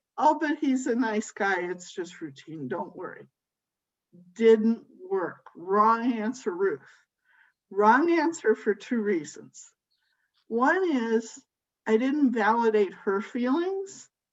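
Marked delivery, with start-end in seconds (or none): none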